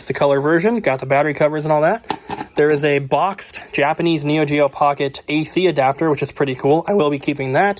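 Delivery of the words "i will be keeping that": voice cracking and breaking. Going through a collection of handheld game items, voice cracking. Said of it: "My voice just cracked".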